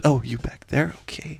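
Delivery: tiny, soft, gentle little voice. Retelling what she said in the moment, imitating her small voice. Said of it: "She said it in that voice too".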